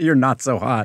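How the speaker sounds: usual speaking voice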